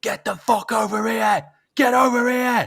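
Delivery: shrill, very high shouting. Acting out a player directing his team during a game, imitating Virgil van Dijk shouting. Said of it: "he was shouting all the way through".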